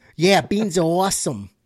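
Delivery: loud, awful put-on Boston accent. Retelling a stand-up joke about a Bostonian praising beans: bad Boston accent. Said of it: "critique on that accent".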